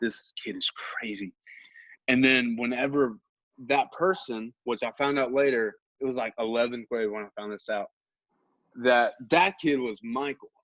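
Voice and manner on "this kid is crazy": unvoiced whisper through giggling. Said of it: "would be laughing also".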